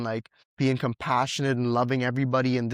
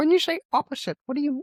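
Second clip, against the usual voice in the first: put-on quizzical lecturer voice, higher. Answering a question while imitating Jordan Peterson. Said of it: "that was my Jordan Peterson impression".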